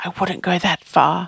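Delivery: hushed whisper. One man answers a companion's praise, whispering back. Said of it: "Sam whispered back".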